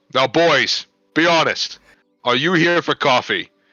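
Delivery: very slow, loud, drawn-out hollered yell. Playing a character who points at two patrons: yelling in character. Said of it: "point at them and yell".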